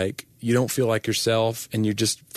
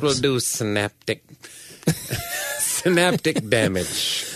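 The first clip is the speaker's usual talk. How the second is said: campy supervillain voice, swooping and theatrical; 2 semitones higher than usual. Asked by the other speaker to say synaptic damage again, in Dr. Evil voice. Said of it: "say synaptic damage again in like Dr. Evil's voice".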